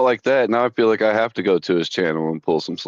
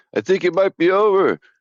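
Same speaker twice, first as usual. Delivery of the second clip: very high-pitched put-on voice; 9 semitones higher than usual. Acting out an old claymation tea commercial: Rocky voice. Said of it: "a good impression".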